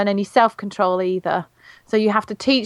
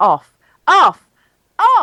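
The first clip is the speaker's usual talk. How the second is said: "off" repeated, building louder and higher; 7 semitones higher, 6 dB louder than usual. Showing how people teach a command in an escalation, each 'off' louder than the last. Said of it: "they'll teach it in an escalation. So they'll go off, off, off like that".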